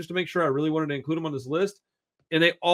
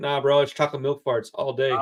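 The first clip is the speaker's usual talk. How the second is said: ordinary delivery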